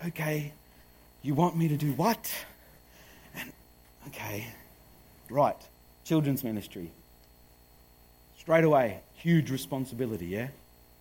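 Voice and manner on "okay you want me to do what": calm voice, lower. Retelling own reply to the offer while staying composed: imitating own calm reply. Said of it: "I kept myself calm".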